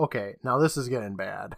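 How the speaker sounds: normal talking voice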